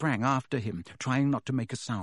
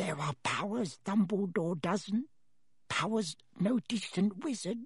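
pressing, hushed whisper; 7 semitones higher, 4 dB quieter than usual. Reading Dobby's line to Harry aloud: Dobby's urgent whisper. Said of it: "Dobby's voice dropped to an urgent whisper".

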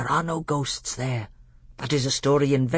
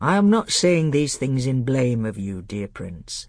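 plain reading voice

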